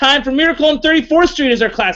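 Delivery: announcer-style yelling, high-pitched. Announcing the classic film coming up next: yelling. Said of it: "I'm yelling again".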